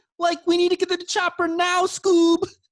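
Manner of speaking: very high, goofy cartoon slacker voice. Having asked to do Shaggy instead, the speaker launches into a Shaggy voice. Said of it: "Can we do that instead?".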